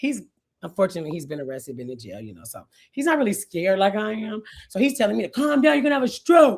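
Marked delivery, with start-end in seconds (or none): 5.3-6.6 frantic, high, urgent screaming. Quoting what he screamed over from the other police car: retelling a scream. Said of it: "He's screaming from the other police car".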